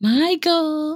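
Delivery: squeaky, very high character voice calling out. Quoting a scene from the movie Mannequin: imitating a character from Mannequin. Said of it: "That's the exact voice".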